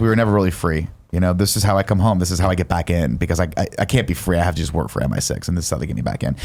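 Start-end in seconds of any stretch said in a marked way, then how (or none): none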